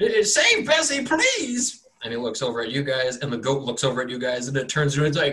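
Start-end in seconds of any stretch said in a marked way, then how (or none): 0.0-1.9 very high, drawn-out, slow begging voice. Voicing a farmer begging the players to save bessie: pleading farmer voice. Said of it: "he says".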